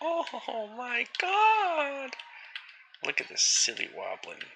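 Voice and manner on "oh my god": very high, squeaky video game character cry. Quoting a favourite video game voice line: Luigi voice. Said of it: "He's like".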